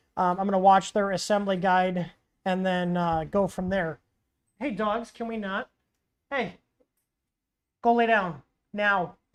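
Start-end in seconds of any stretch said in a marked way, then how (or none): 4.6-9.1 strict, firm, no-nonsense stern tone. Telling the dogs to stop and go lie down, in a stern voice. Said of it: "why I sound so stern with my dogs".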